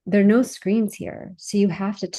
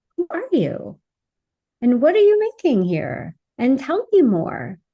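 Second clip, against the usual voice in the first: very curious, open, non-judging, sing-song tone; 6 semitones higher than usual. Showing how to ask children open-ended questions: very curious, open tone. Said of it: "exactly the tone that I'm using, just very curious".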